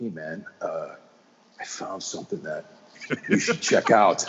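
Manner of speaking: acted-out whispering. Retelling a buddy's phone call, imitating someone whispering. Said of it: "What are you whispering about?".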